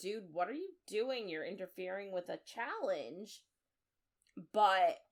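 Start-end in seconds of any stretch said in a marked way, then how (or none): none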